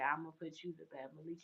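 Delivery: barely audible, very quiet half-whisper. Retelling how a guy came up behind and half-whispered: imitating a half-whisper. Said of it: "He whispers in his ear".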